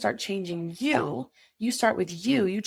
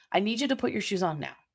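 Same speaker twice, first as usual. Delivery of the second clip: firm, calm, authoritative, no-nonsense tone. Parent telling kids at home to put shoes on: firm, commanding. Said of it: "you say it like that".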